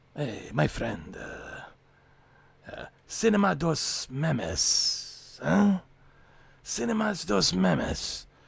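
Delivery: speaking with Venezuelan accent. Doing voices, the speaker picks one and tries a put-on Venezuelan accent. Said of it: "What should I do, Venezuelan?".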